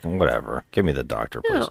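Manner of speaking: put-on breezy, offhand casualness. Retelling a movie character's call for the doctor: imitating a nonchalant tone. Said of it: "he's so nonchalant".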